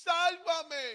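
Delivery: frantic, desperate shriek, very high and very loud. Retelling how a woman cried out to God with nobody coming; retelling a scream to God. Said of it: "empezó a gritar el nombre de Dios".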